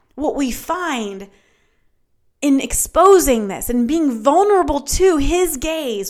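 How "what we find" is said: slow, soft, drawn-out preacher-style line. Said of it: "what we actually find".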